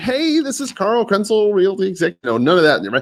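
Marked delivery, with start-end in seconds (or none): 0.0-2.2 overly cheerful, very high, super friendly. Showing a tone to avoid when introducing yourself: super friendly. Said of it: "nor did you want to make it super friendly".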